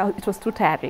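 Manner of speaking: ordinary delivery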